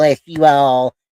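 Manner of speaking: put-on Southern girl accent. Joking about what gets subscribers: put-on southern girl accent. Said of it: "get me a Southern girl accent like this right here".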